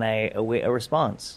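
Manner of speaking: normal talking voice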